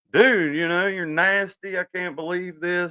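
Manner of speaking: put-on scolding yell. Retelling throwing out a roommate's belongings: imitating his own yelling. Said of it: "I was yelling at him the whole time".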